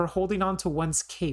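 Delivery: ordinary delivery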